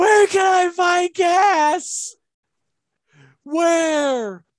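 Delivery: very high, very slow drawn-out yell, "gas" stretched. Speaker acts out what happens when the gas light comes on, retelling own screaming. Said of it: "it is just me just screaming".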